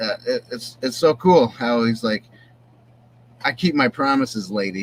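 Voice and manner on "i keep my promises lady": ordinary talk, nothing marked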